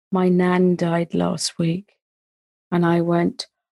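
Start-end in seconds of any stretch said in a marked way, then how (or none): 0.1-1.9 put-on very quiet voice. Retelling a young caller's words on a Childline phone call: imitating a caller speaking very quietly. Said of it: "very quiet at the end of the phone".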